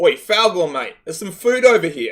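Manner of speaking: loud yelled call.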